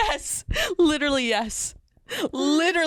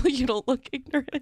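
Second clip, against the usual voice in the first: plain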